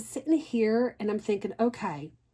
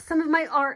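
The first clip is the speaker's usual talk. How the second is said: loud, sudden shouted yell; 6 semitones higher, 4 dB louder than usual. Speaker pointing out her wedding picture and her art, yelling. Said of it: "Sorry, I didn't mean to yell".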